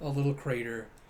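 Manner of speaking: ordinary talk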